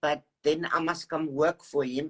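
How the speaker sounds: normal talking voice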